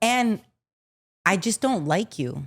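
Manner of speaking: mock, put-on dead-serious tone. Acting out a child telling her mom she's terrible: mock most serious tone. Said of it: "in the most serious tone".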